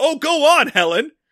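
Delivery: yelling. Recalling watching helen on tv and pausing it: retelling screaming at the tv. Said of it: "I'm screaming at the T V".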